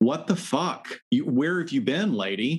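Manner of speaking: mock yelling, high and mild. Recounting yelling at a woman on screen while on the gym elliptical, retelling own yelling. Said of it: "and I was yelling".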